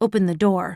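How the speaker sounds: ordinary delivery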